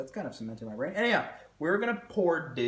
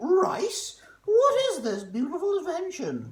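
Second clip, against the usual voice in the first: very high, shrill, drawn-out bad British accent; 7 dB louder than usual. Acting out english people meeting rice: bad british accent. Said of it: "It's not a British accent. I'm sorry".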